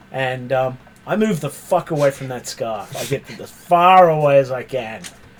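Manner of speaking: ordinary delivery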